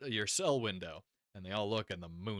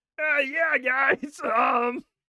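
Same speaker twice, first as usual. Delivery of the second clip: put-on frog puppet voice, higher and louder; 10 dB louder than usual. Acting out a gorgeous character who speaks: Kermit voice. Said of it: "and then he speaks, and you're like, "Kermit."".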